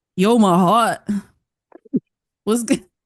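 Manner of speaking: put-on New York accent. Asked for a New York impression, the speaker gives one; New York accent impression. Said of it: "give me your New York impression".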